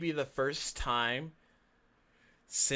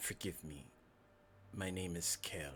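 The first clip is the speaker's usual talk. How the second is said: creepy voice. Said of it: "You got the creepy voice".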